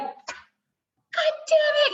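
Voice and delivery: acted-out shrill, very high angry outburst. Retelling how a sister went off at a doctor: imitating an angry outburst. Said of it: "goes off on him".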